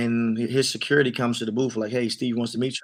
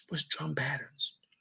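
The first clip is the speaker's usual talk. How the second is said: whisper, much quieter and higher; 3 semitones higher, 12 dB quieter than usual. Recounting a question put to an artist's manager: retelling a whispered question. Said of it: "So I whispered to his".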